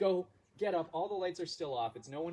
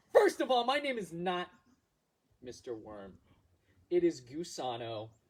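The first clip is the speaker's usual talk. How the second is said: put-on slow worm voice with sass; 4 dB louder than usual. Retelling what the worm answered when asked what the deal was, imitating sassy Gusano. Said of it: "it was a sassy worm".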